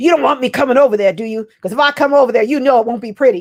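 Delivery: scolding voice. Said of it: "she would give him the business".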